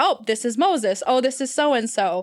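plain

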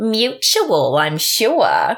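put-on ditzy blonde voice, high and sing-song. Describing a scene, imitating the blonde dancer's ditzy put-on character voice. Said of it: "she has a great character voice that I'm sure she's putting on".

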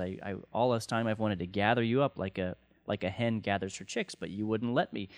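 normal talking voice

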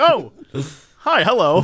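play-acted, caught-off-guard, startled, surprised voice. Imitating the other speaker's greeting, as if they just walked into the room: imitating a surprised greeting. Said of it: "it sounded like you just walked into the room".

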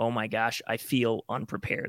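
ordinary delivery

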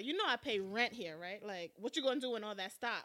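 upset, complaining tone. Retelling a show scene, imitating an upset character: imitating upset Keith. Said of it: "Keith is upset. He's like".

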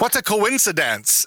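very high, silly, put-on German accent. Describing a silly video, quoting one of them in a german accent. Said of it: "like this German accent".

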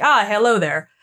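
put-on flat, emotionless American accent. Retelling a game character in ancient Greece who speaks like an American: imitating an emotionless American voice. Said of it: "suddenly he's American".

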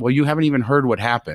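plain

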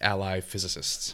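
soft, sarcastic whisper.

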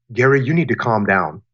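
totally detached, distant, emotionless voice. Showing how telling an angry gary to calm down lands, totally detached voice. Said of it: "in a totally detached voice".

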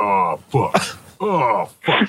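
very low, deep, slow dragged-out bass voice. Demonstrating the low-tone line a co-host joked about: very low voice. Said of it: "I have a naturally low voice".

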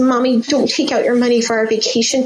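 mock teary little boy voice. A mother retells her son's reaction to an overheard call, imitating Ryder in tears. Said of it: "he's in tears".

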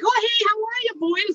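bubbly, cheerful, super perky voice, very high. Retelling a passing hiker's greeting: imitating a super perky hiker mom. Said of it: "super perky, like, happy hiker mom".

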